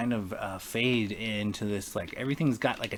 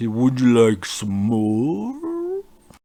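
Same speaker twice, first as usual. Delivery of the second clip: loud, heavily distorted, booming, stretched-out voice; 2 semitones higher, 10 dB louder than usual. Voicing a character who offers more as the mug is handed back: very distorted voice. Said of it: "in a very distorted voice".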